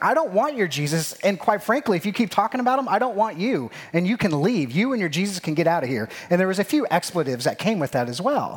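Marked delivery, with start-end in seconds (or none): 0.0-6.1 mock exasperated, frustrated, fed-up brush-off. Retelling a conversation where a man grows frustrated: imitating a frustrated man. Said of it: "he starts getting frustrated with me".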